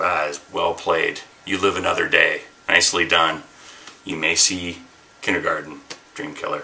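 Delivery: ordinary delivery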